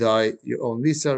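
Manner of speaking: normal talking voice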